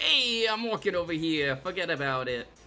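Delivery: put-on New York accent. Talking about being from new york, saying watch this: new york accent. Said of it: "I can't sound New Yorker".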